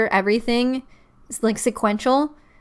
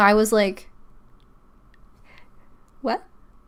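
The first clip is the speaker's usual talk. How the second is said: normal talking voice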